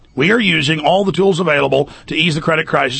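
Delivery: normal talking voice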